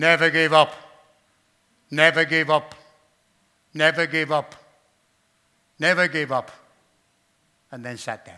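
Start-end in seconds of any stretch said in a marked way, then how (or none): 0.0-6.5 very loud, grouchy, grumpy voice. Retelling a great man's speech at a school, grumpy voice. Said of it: "his grumpy voice says".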